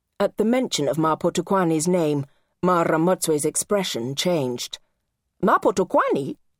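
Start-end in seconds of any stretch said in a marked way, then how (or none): 5.4-6.4 sharp, curt, pitched-up, pointed exclamation. Narrator reads Mara Motswe reacting to Ma Potokwani's name, said sharply. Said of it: "she said sharply".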